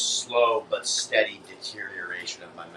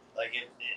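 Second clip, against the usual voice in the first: soft, unsure, faltering and unconfident voice. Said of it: "You sounded so just not confident".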